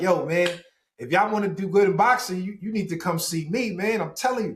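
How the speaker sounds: play-acted, brash, cocky, swaggering New York voice. Retelling meeting someone at an event as a young kid: retelling own brash trash talk. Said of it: "talking shit like".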